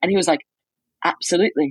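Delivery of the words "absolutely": put-on, assumed British accent. Retelling a chat with a reporter at a trial: imitating a british accent. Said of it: "I'm gonna stop doing the British accent now".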